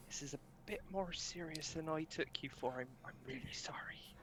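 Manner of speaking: soft, slightly high whisper. Whispering an apology to a character in a game scene: whispering. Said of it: "just whisper to Sebastian".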